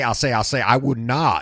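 drawling cartoon rooster voice. Describing Southern senators, the speaker imitates one with a Foghorn Leghorn effect. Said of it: "kind of have a foghorn leghorn effect".

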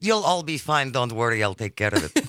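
low put-on Russian accent.

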